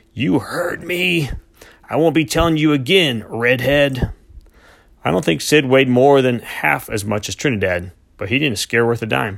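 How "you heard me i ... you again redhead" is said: slow, drawn-out, pitched-up rasping words. Held back by two men, a captive thrusts out his jaw at his opponent, rasping slowly. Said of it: "rasped slowly".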